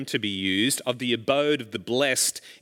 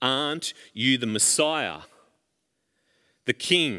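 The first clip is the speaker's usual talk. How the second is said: ordinary delivery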